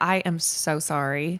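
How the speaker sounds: put-on slight Southern twang. Telling a story, the speaker repeats their own words with a little southern twang. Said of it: "I put a little southern twang in my voice".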